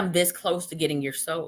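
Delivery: normal talking voice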